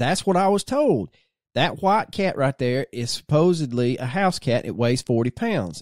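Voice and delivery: ordinary talk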